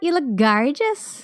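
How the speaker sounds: put-on Irish accent. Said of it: "your amazing accent".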